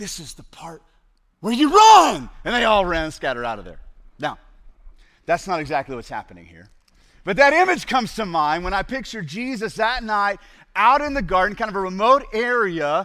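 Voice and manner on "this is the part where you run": put-on ogre whisper, higher. Retelling a movie scene where Shrek scares villagers: Shrek whisper. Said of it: "And then he whispers".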